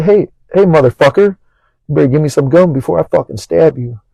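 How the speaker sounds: mock dead-serious, no-nonsense deadpan delivery. Retelling threatening a friend with a needle for gum: retelling own straight-faced threat. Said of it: "with a straight face and all".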